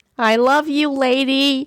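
delighted, cackling scream, high and slow. Narrator reads the line while racing out to hug her, screamed with delight, cackling. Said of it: "I screamed with delight, cackling like a nut".

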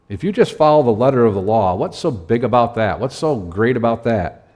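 mildly sarcastic, mocking tone. Paraphrasing a saying of Jesus about the letter of the law: said with sarcasm. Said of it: "And I say with some sarcasm".

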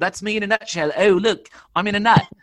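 bad put-on British accent. Speaker describing himself is reminded of a line, poor Austin Powers British accent. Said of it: "that's what we call a poor British accent".

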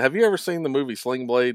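ordinary talk, nothing marked

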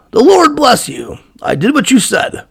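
sunny, friendly, cheerful, high and swooping. Voicing Saul greeting Samuel in a retold scene: cheerful greeting. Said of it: "greeted him cheerfully and said".

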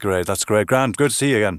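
put-on Irish accent from the south. Showing how he adopts an accent when in Southern Ireland, Southern Irish accent. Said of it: "if I was in Southern Ireland, I would be a little bit more like that".

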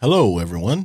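small radio announcer voice. Husband and co-host greets listeners at the start of the episode in his little radio voice. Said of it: "There you go with his little radio voice".

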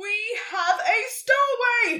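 very loud, very slow, high, drawn-out yell. A unicorn drags a stowaway by her tail to someone special, yelling. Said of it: "he yelled".

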